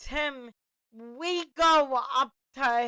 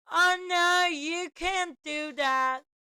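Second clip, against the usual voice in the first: put-on high pre-puberty young child's voice; 5 semitones higher than usual. Retelling what they said to their mom at six or seven, in a young child's voice. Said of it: "So in my pre-puberty voice".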